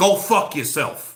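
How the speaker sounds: put-on quick, rapid-fire New York accent. Describing how Lou DiBella tells people off, in his New York accent. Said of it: "in a New York accent kind of way".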